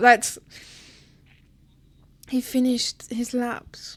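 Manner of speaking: hushed, emotional, teary voice, on the verge of tears. Hearing how Alex finished his laps, reacting while tearing up. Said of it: "I'm actually tearing up".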